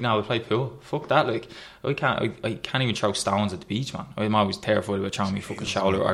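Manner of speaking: ordinary delivery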